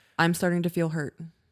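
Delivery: ordinary delivery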